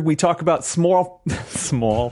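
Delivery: Pittsburgh-sounding vowel. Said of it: "was that like a Pittsburgh accent that just came out?".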